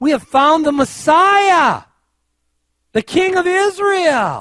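loud, high, slow excited shout.

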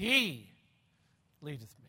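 strong stress on "He", rest lighter. Reading the psalm line with emphasis on the shepherd: stress on he. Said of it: "the emphasis should be placed on the shepherd".

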